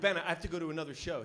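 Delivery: ordinary delivery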